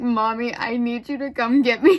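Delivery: acted, loud, tearful, begging cry. Retelling a phone call asking mom to pick you up: imitating own crying. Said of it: "I called my mom crying".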